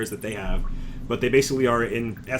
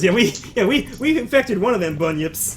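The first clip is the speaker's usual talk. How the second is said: high, loud, gleeful boastful delivery. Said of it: "ma'am laughs at that and says".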